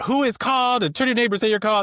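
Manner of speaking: acted fired-up preacher voice. Retelling preaching at a church: imitating excited preaching. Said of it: "I was kind of getting all excited".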